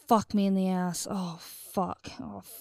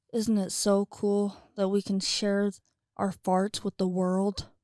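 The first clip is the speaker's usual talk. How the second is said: usual speaking voice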